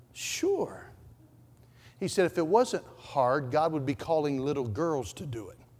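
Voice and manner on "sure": half-whispered, breathy, sarcastic delivery. Quoting a man's reply, imitating a sarcastic 'sure'. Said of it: "I sensed a hint of sarcasm in that last sure".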